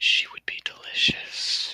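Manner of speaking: close, soft whisper into an ear. Voicing a creature whispering in an ear: whispering in character. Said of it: "she just whispers in ear".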